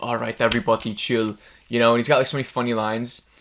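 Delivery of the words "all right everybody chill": action movie hero voice, punchy one-liner delivery. Quoting a funny line from Batman and Robin: Arnold impression. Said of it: "where he's like".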